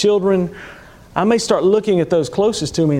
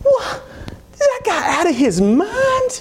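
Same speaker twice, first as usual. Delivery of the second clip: put-on very high, slow tiny little girl voice. Retelling what a little girl in the back said when a car cut in: little girl's voice. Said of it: "this little bitty girl's voice in the back says".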